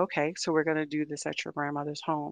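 ordinary talk, nothing marked

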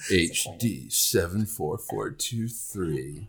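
deep, sultry baritone. Urged by co-hosts, the speaker reads out a star's catalog name: deep, sexy voice. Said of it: "can you do like your sexy voice?".

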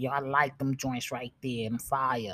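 quiet man's voice. Retelling what a man said while looking at him, imitating how he sounded. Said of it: "That's how he sounded".

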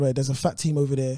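usual speaking voice

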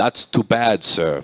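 put-on Afrikaans-accented English. Recalling how an Afrikaans teacher at school used to speak: Afrikaans accent. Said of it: "That's how he used to speak".

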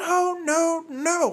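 furious voice, high and loud.

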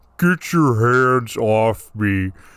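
deep, dropped, demonic voice. Describing a tape recording, imitating its demonic voice. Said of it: "the demonic voice on the tape is just going".

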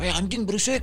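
high-pitched, mock yelling.

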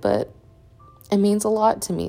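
teary, near-crying voice. Asking listeners for prayers while talking about birth, tearing up. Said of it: "I'm tearing up again thinking about it".

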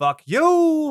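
antagonistic jab, very high and loud. Describing a movie character's antagonistic delivery, imitating Charlie's voice. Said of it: "You even do it in his voice".

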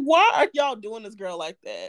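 ordinary delivery

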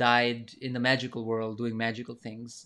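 plain

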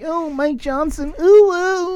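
cringey, high, slow, sexy anime-style voice. Promising to call out listeners by name: sexy anime cringe voice. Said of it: "I'll say it in a sexy voice".

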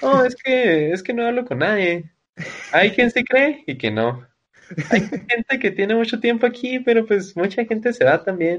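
high, mocking chilango Mexico City accent. Imagining how someone would answer, the speaker puts on a mocking chilango accent. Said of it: "me lo imagino que con un tonito, pues, pues chilango".

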